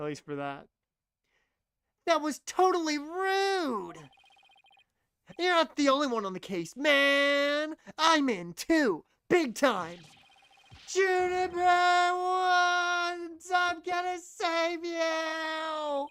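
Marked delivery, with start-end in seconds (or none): 2.0-16.1 very high, very slow, drawn-out screaming. Voicing a game character's lines aloud: screaming a character's lines. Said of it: "I was not ready to have to scream shit".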